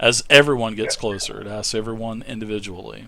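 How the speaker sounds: ordinary talk, nothing marked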